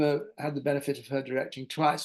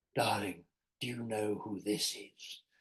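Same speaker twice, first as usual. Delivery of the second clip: grand, incredibly theatrical deep voice, low and soft; 4 semitones lower, 7 dB quieter than usual. Recall a woman who regularly phoned you at six thirty, in Annie's deep, incredibly theatrical voice. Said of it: "her deep, incredibly theatrical voice".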